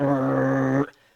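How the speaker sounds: put-on low, soft, grumpy old man growl. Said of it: "who now just is like an old man and just goes".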